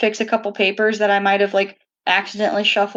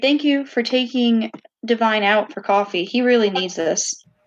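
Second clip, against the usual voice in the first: normal talking voice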